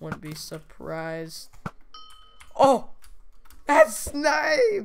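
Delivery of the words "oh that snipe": voice breaking upward, very high and very loud. Player reacts to a snipe while playing a game, voice cracking. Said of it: "Voice crack".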